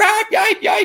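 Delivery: very high, loud yelping like a hurt dog.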